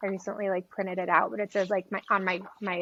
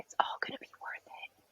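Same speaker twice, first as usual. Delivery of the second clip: put-on whisper, quieter. Retelling what a nine-year-old said to comfort them: imitating a whisper. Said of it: "he actually whispered".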